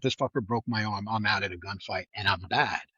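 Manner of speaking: ordinary talk, nothing marked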